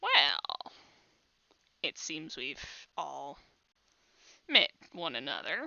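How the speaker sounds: low, soft, swooping put-on bird-creature voice. Storyteller voicing a bird figure speaking to the whole amphitheater: bird creature voice. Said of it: "Try not to judge my bird voice".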